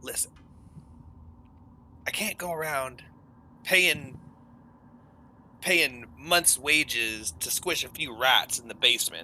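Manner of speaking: secretive, hushed half-whisper. Retelling what a man said in a quiet bar, half-whispering. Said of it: "And he whispers and he says".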